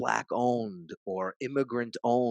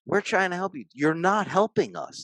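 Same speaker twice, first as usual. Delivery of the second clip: put-on scream, higher and louder; 9 semitones higher, 6 dB louder than usual. Retelling how a woman screamed at people spray-painting a Starbucks: imitating a woman screaming. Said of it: "That's the woman screaming at them".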